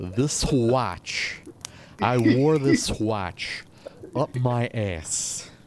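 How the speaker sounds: drawn out word by word, very slow, deliberate. Admitting it's the only one he can do, the speaker tries a Christopher Walken impression. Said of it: "I can't do it".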